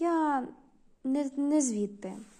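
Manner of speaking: abashed, sheepish, flustered embarrassed tone. Comrade Ogre answers Comrade Schmidt's question about his district; embarrassed. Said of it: "почервонів і збентежено сказав".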